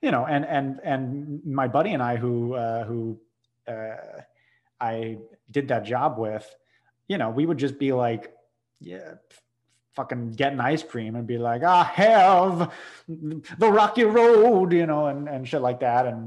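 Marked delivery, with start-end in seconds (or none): 11.6-14.7 put-on very loud, very slow old-fashioned Southern drawl. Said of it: "doing the Southern accent".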